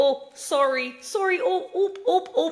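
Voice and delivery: very high, loud, bumbling put-on Canadian accent. Showing how clumsy drunk apologies start to sound: put-on Canadian accent. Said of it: "a little bit Midwest, a little bit Canadian".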